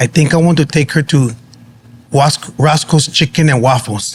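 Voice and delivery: put-on very thick Filipino accent, laid on heavily. Retelling what he said one day, the speaker uses a thick Filipino accent. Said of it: "in a very thick Filipino accent".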